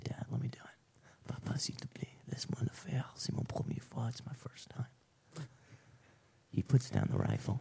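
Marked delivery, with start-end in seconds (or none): 0.0-4.9 soft, pleading whisper. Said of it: "I say".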